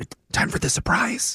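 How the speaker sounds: slightly high, hushed whisper under the breath. Calling from a hiding spot and asking if it is time: whispering. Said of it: "Why are you whispering?".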